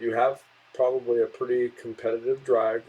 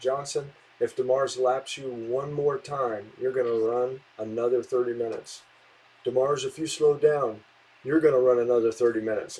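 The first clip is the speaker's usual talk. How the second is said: ordinary delivery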